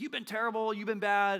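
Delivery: shrill, very high, loud yell. Retelling how Jacob confronts his father-in-law: imitating someone yelling. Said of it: "He just yells at him".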